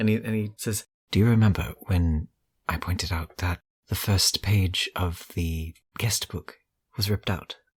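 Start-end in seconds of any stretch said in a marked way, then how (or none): 1.1-7.5 lowered, hushed voice. Sharing a tip with the team in character: lowered voice. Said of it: "in a lowered voice".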